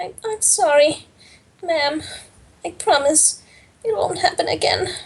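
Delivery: very tiny, squeaky, high-pitched voice. Voicing a character who was crying and now apologizes: very tiny, squeaky voice. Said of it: "voice very tiny and squeaky".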